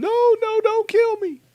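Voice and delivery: high, loud, terrified scream. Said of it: "he screamed".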